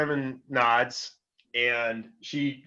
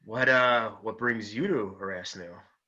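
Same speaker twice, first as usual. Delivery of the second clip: hushed whispering voice; 2 semitones lower than usual. Voicing a character polishing a glass, asking a question: whispering. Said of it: "kind of a whisper".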